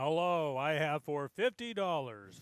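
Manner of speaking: very slow, drawn-out auctioneer call. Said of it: "slow it down a little bit for the callers".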